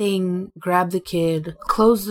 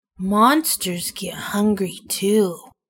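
said with a growl. Reading a story, Pumpkin answers Aurora, in a low growl. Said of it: "She growled, her voice getting low".

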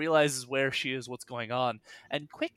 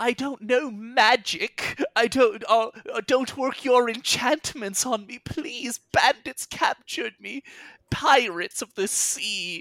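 put-on old woman voice, higher, louder; 10 semitones higher, 7 dB louder than usual. Under an illusion making her look like a hag, she pleads: old woman's voice. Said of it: "With the old woman's voice".

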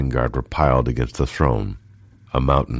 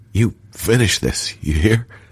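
high, strained dying man's voice through gritted teeth; 8 semitones higher than usual. A dying man whose hand his companion holds gives an order; ordering through bloody teeth. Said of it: "ordered Gilliam through bloody teeth".

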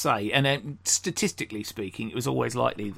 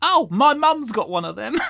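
put-on very high, loud small child's voice; 12 semitones higher, 7 dB louder than usual. Retelling a street leafleting story, imitating a little kid's voice. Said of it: "this little kid's voice goes".

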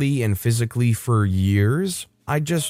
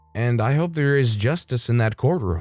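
ordinary delivery

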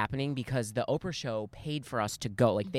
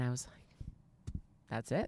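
normal talking voice

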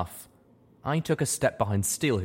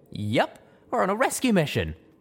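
eager, enthusiastic, high, bouncy; 11 semitones higher than usual. Narrator reads a mare answering a question about her mission, enthusiastic. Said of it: "the enthusiastic amber mare said".

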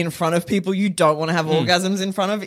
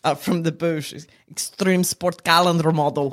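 nondescript, generic put-on Eastern European accent, pitched lower; 2 semitones lower than usual. Showing off an accent with a go-to phrase, nondescript eastern european accent. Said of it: "I can do a nondescript Eastern European accent".

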